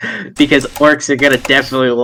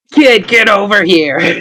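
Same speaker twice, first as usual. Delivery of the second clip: put-on tipsy, drunken voice, pitched up; 5 semitones higher, 3 dB louder than usual. Voicing a character calling a kid over: acting drunk. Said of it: "my drunken state here".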